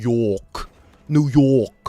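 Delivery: New York accent, drawn-out O in York. Explaining accents, the speaker demonstrates a New York accent with a long O. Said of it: "New York has more of an O".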